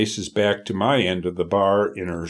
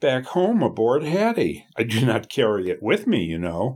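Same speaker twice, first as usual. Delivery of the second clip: ordinary delivery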